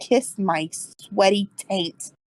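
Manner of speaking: muttered aside, quietly muttering. A player's character walks down the stairs, muttering. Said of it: "I just start muttering".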